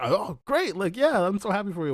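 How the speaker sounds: high, loud, gushing proud excitement.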